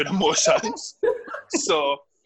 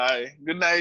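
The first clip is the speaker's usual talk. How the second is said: ordinary talk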